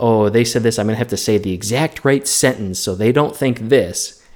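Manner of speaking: ordinary talk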